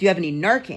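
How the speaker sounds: plain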